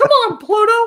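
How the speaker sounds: squeaky voice, high and loud. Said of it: "that sounded just like Mickey Mouse".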